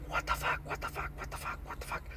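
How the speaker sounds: very soft whisper. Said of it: "and he was whispering".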